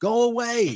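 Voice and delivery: put-on yelling. Retelling yelling at beings in the house: retelling yelling at ghosts. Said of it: "I'm yelling at these beings".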